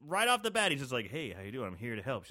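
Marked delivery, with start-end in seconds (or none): 1.1-2.2 smooth, slick, charming, easy tone. Retelling how the killer greets a nurse: imitating a sweet-talking smooth talker. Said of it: "He's a sweet-talking cat".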